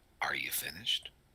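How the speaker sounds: utterly deadpan, very flat, very low and quiet. Voicing a struck character who turns to the attacker: very flat delivery. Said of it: "He just very flatly says".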